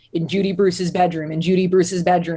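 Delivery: pitch dropped way down, narrator-style delivery. Retelling a phrase heard on a crime show: Forensic Files narrator's really low voice. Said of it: "this really low voice".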